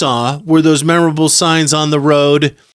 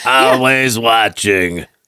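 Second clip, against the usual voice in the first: low, put-on cartoon character voice; 5 semitones lower than usual. While joking about ad ideas, the speaker tries out a put-on character voice. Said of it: "what's wrong with my character voices?".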